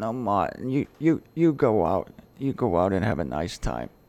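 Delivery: woman's voice.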